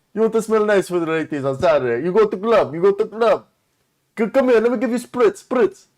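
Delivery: put-on Eastern European accent. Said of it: "You look like you're from Prague".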